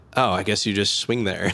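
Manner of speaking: mocking put-on sarcastic tone. Quoting what a man said, imitating his sarcastic tone. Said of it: "saying something like sarcastic".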